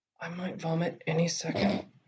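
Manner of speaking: slow, hushed, close-to-the-ear whisper. Leaning down in character to whisper to a companion: whispering. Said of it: "I'm gonna lean down and whisper".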